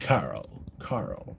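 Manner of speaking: terrible, breathy whisper, badly on purpose. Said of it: "it's terrible".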